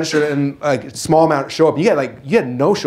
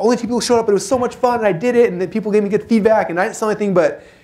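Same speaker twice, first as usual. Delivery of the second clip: put-on excited gush, bubbling and pitched up; 6 semitones higher than usual. Retelling a guest's message after a small event: imitating someone excited. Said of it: "on fire and excited".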